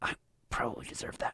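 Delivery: breathy whisper under the breath. Voicing a slapped character muttering after being hit: whispering to himself. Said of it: "he whispers to himself".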